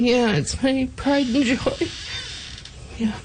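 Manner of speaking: very high, moved, emotional voice. Asked about the home they're staying in, getting emotional. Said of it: "Why are you getting emotional right now?".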